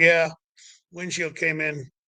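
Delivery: mock calm, flat, matter-of-fact tone. Retelling the driver's answer after the car accident; retelling a calm, flat reply. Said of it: "and that was the voice".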